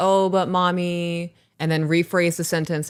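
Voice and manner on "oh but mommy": put-on sweet, cutesy, coaxing, wheedling little-kid voice. Parent imitating her daughter after being told no: imitating daughter being cutesy. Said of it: "she'll be like all cutesy and be like".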